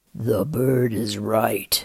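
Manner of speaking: deep, rumbling voice of a giant whale. Narrator reading a huge whale's words to Lars, in a deep, rumbling voice. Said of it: "he said in a deep, rumbling voice".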